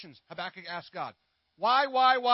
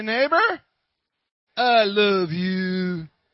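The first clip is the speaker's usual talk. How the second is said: loud, drawn-out Southern accent; 2 semitones higher, 8 dB louder than usual. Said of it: "put a little southern to it".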